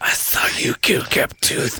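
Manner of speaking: hissed, read-aloud delivery. Re-reading a book line after noticing the character hissed it: hissed line. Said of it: "it says Pike hissed".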